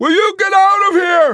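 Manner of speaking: very high, very loud, shrill, beseeching yelp. Yossarian, shoving Arfi away, calls to him, yelping beseechingly. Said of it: "he yelped beseechingly".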